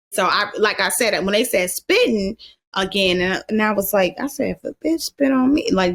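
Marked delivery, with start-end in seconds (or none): 4.5-5.7 quiet muttering under breath, higher pitch. Retelling a remark made while standing in a line: imitating muttering under breath. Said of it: "just like this".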